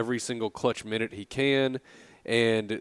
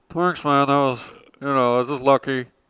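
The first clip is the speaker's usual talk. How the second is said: put-on frog-like voice, higher and louder; 3 semitones higher, 8 dB louder than usual. Quoting a sick guy in the locker room, imitating a frog-like voice. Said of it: "he sounds like a frog".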